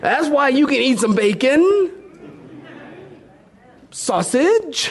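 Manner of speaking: very high pulpit preaching voice. Preacher addressing the saints, in his preaching voice. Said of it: "It's my preaching voice".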